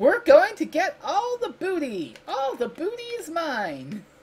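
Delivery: very high, swooping video game character voice. Complaining about a game's dialogue, imitating a game character's voice. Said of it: "hear this voice saying".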